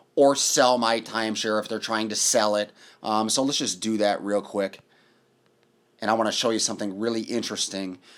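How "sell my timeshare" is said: plain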